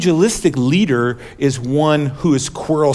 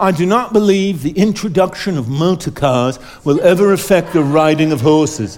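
put-on British accent. Reading out a 1903 quote from a minister of parliament, in a british accent. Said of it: "i have to say this in a british accent".

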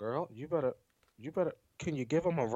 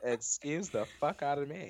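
ordinary talk, nothing marked

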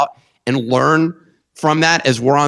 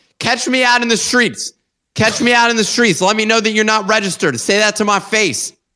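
fake, pitched-up, hard angry ranting; 8 semitones higher than usual. Host urging listeners to sign up at thenifty.com, in mock anger. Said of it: "The level of anger that I'm feeling right now".

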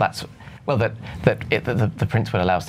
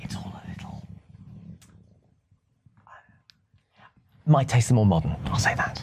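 speaking in a lowered voice; 2 semitones lower, 3 dB quieter than usual. Judging a room's collection, the speaker tries not to offend the prince, lowered voice. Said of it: "I'm going to lower my voice".

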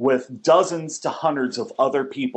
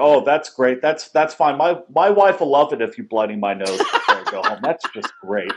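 bone-dry sarcastic delivery. Retelling what is said when students mess up in the ring: imitating his own dry sarcasm. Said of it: "I'm more dry sarcasm when my guys screw up".

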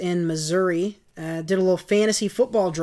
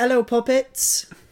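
put-on British accent, pitched up; 5 semitones higher than usual. Greeting the audience as a joke: put-on british accent. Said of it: "We're British now".

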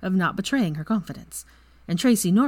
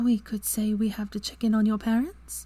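hesitant, tentative whisper, higher pitch; 4 semitones higher than usual. Hermione pauses, then whispers hesitantly to Draco. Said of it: "she whispered hesitantly".

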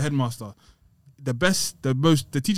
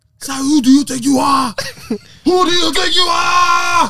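put-on yelling in French accent, "are" stretched out; 11 dB louder than usual. Retelling a run-in with a big French guy, the speaker quotes him with mock French-accent shouting. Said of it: "The French accent did not help".

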